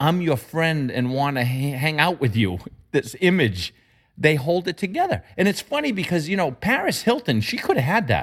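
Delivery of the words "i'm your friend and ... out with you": fake, chummy, overly friendly voice. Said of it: "this phony".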